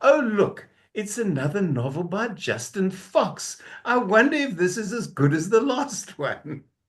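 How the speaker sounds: theatrical, showy delivery meant to be overheard. Showing how someone should remark on a displayed book, very loud exclamation. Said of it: "in a very loud uh, voice go".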